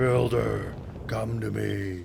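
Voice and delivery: low, creaky, rough and eerie spooky voice. A voice from the old mine entrance calls for the builder: spooky voice. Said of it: "what the heck was that spooky voice?".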